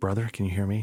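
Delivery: whispering. Role-playing character checks whether Brother can hear them; whispering. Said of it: "Same level of whisper".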